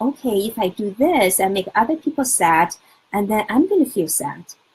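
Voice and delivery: ordinary delivery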